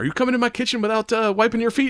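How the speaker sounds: put-on very high, cranky, angry old lady scolding. Retelling a scene where an old chef scolds a man: imitating an angry grandma.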